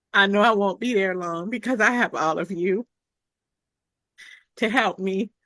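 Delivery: holding back tears, fighting emotion. Telling fellow coaches about being new and struggling, holding back tears. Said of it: "I'm trying not to get emotional about it".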